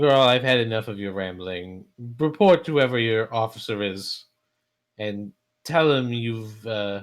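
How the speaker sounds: loud, scoffing, scornful dismissive tone.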